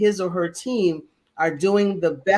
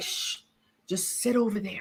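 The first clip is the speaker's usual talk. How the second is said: whispered, hushed shushing; 2 semitones higher, 8 dB quieter than usual. Retelling how people in a boardroom greeted them: imitating whispering. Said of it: "They were whispering".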